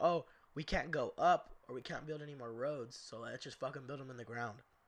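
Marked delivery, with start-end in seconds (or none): none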